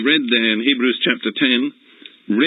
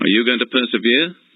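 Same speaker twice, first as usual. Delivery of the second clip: usual speaking voice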